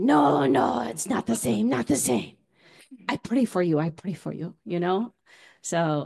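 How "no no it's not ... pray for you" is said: put-on strong Korean accent, higher pitch. Retelling a woman's words to the speaker, in a very Korean accent. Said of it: "who has a very Korean accent".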